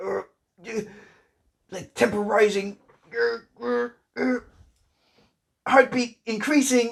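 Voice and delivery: put-on angry voice, pitched very high. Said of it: "he actually does try and apologize in an angry way".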